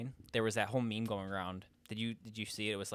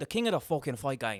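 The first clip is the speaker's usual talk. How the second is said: loud, belted-out, put-on Irish accent; 4 semitones higher, 5 dB louder than usual. Speaker shows off the one accent they do well: Conor McGregor impression. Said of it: "the fucking Conor McGregor, I feel like I'm really good at it".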